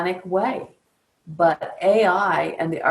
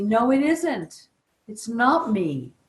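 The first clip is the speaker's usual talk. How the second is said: very slow, acted protesting cry, like screaming; 5 semitones higher than usual. Retelling what Mother Nature said to the speaker: imitating someone screaming. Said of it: "she's screaming at me".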